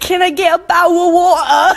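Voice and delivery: put-on British accent. Joking about how british people order: mock british accent. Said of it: "British people be like".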